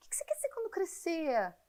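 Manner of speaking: high, sweet, put-on adult voice.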